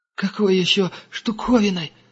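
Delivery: very high, quavering, trembling, timid voice. An angel, just hauled to his feet, answers the tracker's question: trembling voice. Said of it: "дрожащим голосом проговорил ангел".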